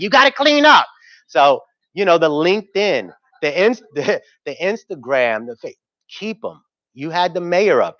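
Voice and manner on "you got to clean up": mock very high, shrill, scolding shout. Speaker retells what his wife says about his business cards; imitating wife yelling. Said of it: "My wife is yelling at me like".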